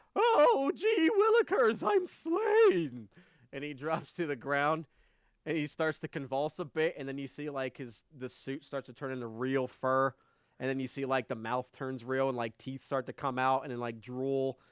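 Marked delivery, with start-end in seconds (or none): 0.1-3.0 very high, very slow, drawn-out dying wail. Voicing a figure punched across the snout: struck character reeling from a punch. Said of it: "he reels backwards and goes".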